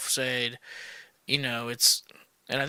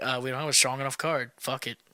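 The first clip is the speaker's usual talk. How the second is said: usual speaking voice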